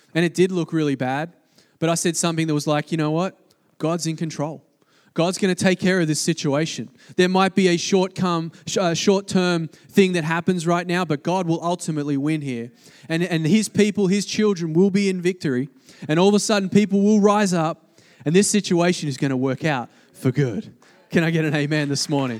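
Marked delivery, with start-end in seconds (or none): none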